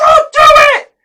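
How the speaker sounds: very high, loud, shrill, booming scream. Retelling yelling at a lady running into the water: retelling his own yell. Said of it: "I'm yelling at all the people".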